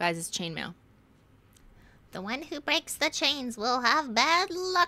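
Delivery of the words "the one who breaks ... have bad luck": high-pitched put-on grandmother voice. Reading a chain letter aloud: grandma's voice. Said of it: "So that's my grandma's voice".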